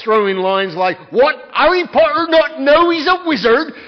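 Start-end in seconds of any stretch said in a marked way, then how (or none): 1.1-3.6 loud, high storybook character voice, belted out. A dad reading a story to his kids switches to a Hagrid impression. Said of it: "do my Hagrid impression".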